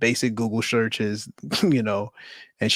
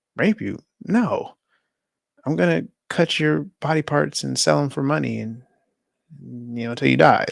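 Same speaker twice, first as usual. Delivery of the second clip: mock offhand, matter-of-fact, casual, pitched up; 5 semitones higher than usual. Retelling a man's reply while recounting a story; retelling a casual reply. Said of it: "he just says it so casually".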